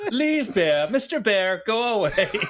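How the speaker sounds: put-on polite Japanese female accent. Imagining what a robot's megaphone says to bears: very polite japanese woman voice. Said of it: "like a very polite Japanese woman go".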